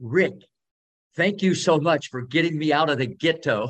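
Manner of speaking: mildly called-out yell. Retelling coming up a driveway when he yells a greeting: imitating Richard yelling. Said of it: "and he yells".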